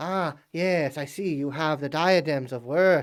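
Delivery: chattering, chittering mantis-like creature voice. Voicing the mantis being as it speaks to you: chittering mantis creature voice. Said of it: "chit- chittering its little mandibles".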